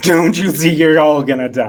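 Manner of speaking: put-on very loud, bigger big boy voice. Told to try that again, a character repeats the line in his big boy voice. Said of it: "Try that again with your big boy voice".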